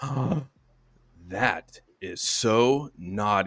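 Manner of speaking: put-on, very slow, drawn-out, playful joking scold. A parent shows what they say when their daughters misbehave, jokingly mock-scolding. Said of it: "I'll just do it like jokingly".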